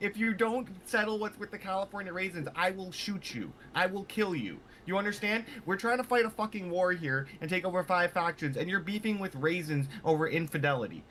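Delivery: high-pitched, furious character voice.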